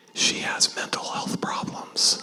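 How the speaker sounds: hushed whisper. Retelling what a client whispered to them, whispering. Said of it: "in a whispering voice".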